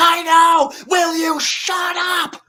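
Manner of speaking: very high, very slow, shrill, drawn-out angry yelling. A mom turns around to shout at her own father; retelling a mom's yell. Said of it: "yelling at the mom who was yelling".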